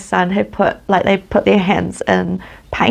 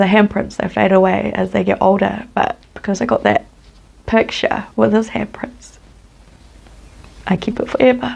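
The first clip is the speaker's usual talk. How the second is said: choked-up voice, on the verge of crying. Explaining a poem about a child's fading handprints, choking up, about to cry. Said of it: "I'm gonna cry again".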